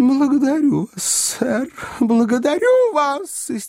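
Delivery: shrill, very high, hysterical outcry. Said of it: "истерически выкрикнула миссис Бардл".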